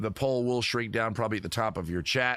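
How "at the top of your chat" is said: ordinary talk, nothing marked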